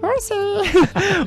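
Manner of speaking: very high, slow, cute creature voice.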